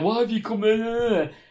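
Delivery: play-acted shrill, high shout. Retelling how a man pulled someone from the crowd, acting out his shout. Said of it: "started shouting".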